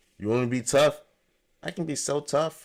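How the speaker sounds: unconvincing, unsure tough talk. Imitating a man claiming he can be tough: imitating someone unconvincingly tough. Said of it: "it don't sound convincing at all. ... Like that's how he sound".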